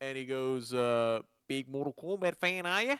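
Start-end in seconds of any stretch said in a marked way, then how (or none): 1.5-3.0 mumbly put-on Australian accent, pitched up. Retelling what a stranger on a cruise said: imitating an Australian accent. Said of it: "Ah, Australian".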